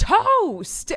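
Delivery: very loud, very high, shrill, insistent yell. A mom acts out her child repeating a word she did not understand, retelling a yell.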